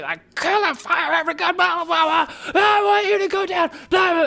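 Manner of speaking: very high, shrieking, unhinged screaming tantrum. Retelling a movie scene where Kylo throws a tantrum: imitating Kylo screaming. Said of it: "he's just screaming".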